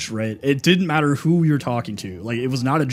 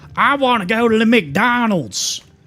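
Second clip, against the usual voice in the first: put-on super thick, heavy Southern accent, pitched very high; 10 semitones higher, 5 dB louder than usual. Speaker imitates their childhood self talking to their parents, in a super thick Southern accent. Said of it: "I had this like super thick accent".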